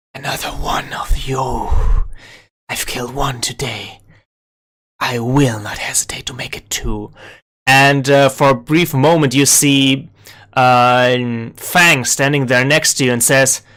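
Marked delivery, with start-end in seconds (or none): 0.2-7.2 hushed, haunting, eerie, ghostly voice, close and quiet. Narrator voices Vanta using the player as a shield, in their ear: Vanta's eerie ghostly hush. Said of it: "eerily, ghostly hushing".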